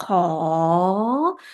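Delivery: ko with pitch rising through the syllable. Lesson on high class consonants: rising tone on ko. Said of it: "can you hear the tone? It's rising, right?".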